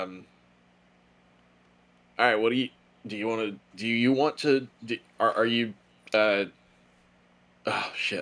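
stammering, stuttering speech. Asking the game master what to do next: stammering. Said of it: "I'm stammering".

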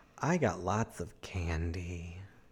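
suggestive, creepy delivery. Speaker answers a question about Halloween candy, in a creepy suggestive tone. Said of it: "why'd you say it like that?".

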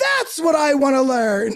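put-on excited screaming. Retelling how a man reacted on feeling someone's energy, retelling an excited scream. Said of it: "he just screams".

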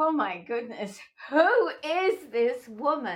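amazed tone. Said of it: "And I'm like".

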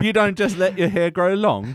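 high, gummy, toothless put-on British accent. Continuing a bit about people from old times, in a toothless British impersonation. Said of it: "the longer this impersonation goes on, the more toothless and British it becomes".

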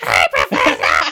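very deep, low, loud, croaky toad voice. Recalling making fun of Luke to your wife: toad voice mocking Luke. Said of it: "I was just doing like my toad voice".

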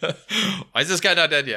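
loud, high, drawn-out yell. Retelling yelling at teammates during a group game: imitating own yelling. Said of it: "I'll just start yelling at you all".

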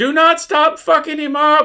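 high, shrill, loud hollered shout. Retelling what someone in the movie audience yelled during a fight scene, retelling an audience member's yell. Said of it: "someone in the audience just yelled out".

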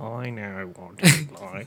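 very low, deep, slow, drawn-out drawl. Showing how the puppet guy's line should sound: Snape voice. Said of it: "It's still like".

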